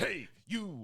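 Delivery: high, screaming shout. Acting out shouting at kids in a school gym: Mister T impression, screaming. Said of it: "Just start screaming sage advice at children".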